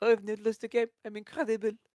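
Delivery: put-on typical French accent, high-pitched and yelling. Imitating an unbeaten player yelling about his record: imitating MarineLorD's French voice yelling. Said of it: "the typical French voice is just yelling at you".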